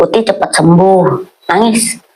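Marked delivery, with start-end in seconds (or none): none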